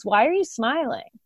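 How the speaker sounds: grave, humourless, dead serious tone. Retelling a colleague's question in a hallway: imitating someone dead serious. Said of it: "he was dead serious".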